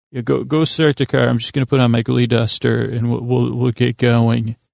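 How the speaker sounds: normal talking voice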